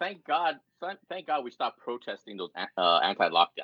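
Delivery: heavy sarcastic, fake-thankful tone. Reacting to a list of news events from that year: sarcastic. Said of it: "Yeah, sarcasm".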